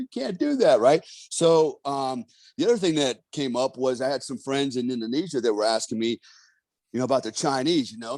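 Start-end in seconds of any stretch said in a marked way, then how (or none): 0.0-0.8 mock words bubbling with giggles, very high. Retelling a man's mocking reply, imitating someone giggling while talking. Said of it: "he's laughing and giggling like".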